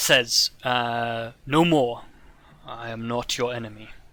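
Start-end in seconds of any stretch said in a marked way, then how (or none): 1.5-3.9 low, heavy, rumbling thunder-like voice. Voicing the giant as he tells the party he is not their enemy, low rumbling thunder voice. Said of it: "a low voice that sounds like rumbling thunder".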